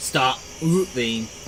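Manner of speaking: low, quiet, strange mechanical robotic voice. Narrating a figure who looks at you and speaks, in a weird robotic voice. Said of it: "in what appears to be a very weird robotic voice".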